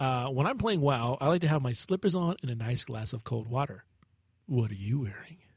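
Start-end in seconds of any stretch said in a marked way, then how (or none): 4.5-5.3 creepy tone, lower. Reading a listener question aloud to another speaker: creepy reading. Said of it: "'Cause you read it creepy".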